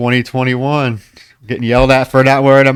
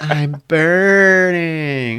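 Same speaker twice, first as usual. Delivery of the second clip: awkward, cringy delivery, "burning" drawn out; 3 semitones higher than usual. Mocking a character's cringy line while discussing a scene: imitating Alyssa's cringy line delivery. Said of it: "the line delivery".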